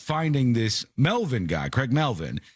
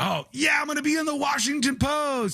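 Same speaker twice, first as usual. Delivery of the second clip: put-on thrilled glee, very high-pitched excited gush; 13 semitones higher than usual. Describing a video of an arrested man meeting a journalist, imitating his excitement. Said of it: "he was all excited about it".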